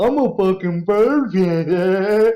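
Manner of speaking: high, loud, very slow drawl. Mocking a movie character with an overbite and teeth popping out: imitating Taylor Lautner's character. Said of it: "he's making jokes like".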